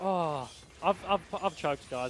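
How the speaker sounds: put-on English accent.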